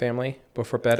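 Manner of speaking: usual speaking voice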